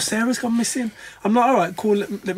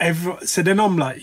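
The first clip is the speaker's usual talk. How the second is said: ordinary talk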